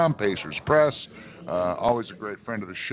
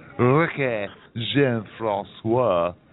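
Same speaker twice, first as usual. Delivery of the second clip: exaggerated put-on French accent, much slower. Discussing the Colts releasing a player, saying his name with exaggerated French pronunciation. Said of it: "I'm trying to do it as French as possible".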